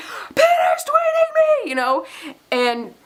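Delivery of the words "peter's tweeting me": shrill, very high, excited scream. Retelling screaming in a candy shop over a tweet: imitating own screaming.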